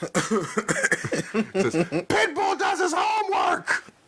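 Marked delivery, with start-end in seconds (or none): 1.8-3.8 exaggerated very high, slow, shouted wrestling promo voice. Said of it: "starts cutting a terrible promo himself".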